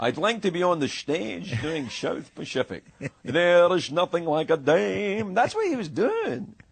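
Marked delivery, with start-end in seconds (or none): 0.0-5.3 put-on Scottish accent with the word "dame" long and drawn out. Imitating a big hairy man from Edinburgh, in a Scottish-accent impression. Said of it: "Is that an easier impression to do for you because you're Scottish?".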